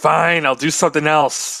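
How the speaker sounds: contained outburst in a put-on character voice. Playing a fairy who yells at magic after a refusal: yelling in character. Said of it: "so she just yells to the Wii".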